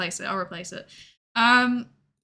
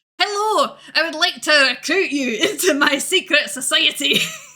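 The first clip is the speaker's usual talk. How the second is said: put-on Scottish accent, pitched up; 5 semitones higher, 4 dB louder than usual. Retelling a stranger's recruitment pitch; scottish accent. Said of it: "he had a Scottish accent".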